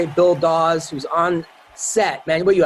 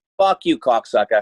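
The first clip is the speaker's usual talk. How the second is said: tough, put-on Boston cop accent; 7 semitones lower than usual. An actor shows a line from his corrupt Boston cop role, in a Boston accent. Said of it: "That's a good accent".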